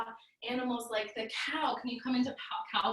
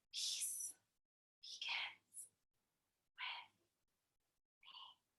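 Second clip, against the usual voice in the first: full, very soft, hushed, barely audible whisper. Leading a group in repeating a phrase, now in a whisper. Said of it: "And now in a whisper".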